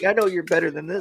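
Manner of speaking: put-on yelling. Retelling how the other speaker yelled while playing Rivals: imitating someone yelling. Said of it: "you'd be yelling".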